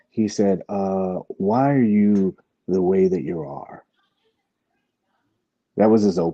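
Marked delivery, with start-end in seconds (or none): 1.2-3.8 raised, creaky, raspy, high-pitched comic voice. Reading out a question from a message, in a Michael Scott voice. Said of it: "I read it in my Michael Scott voice".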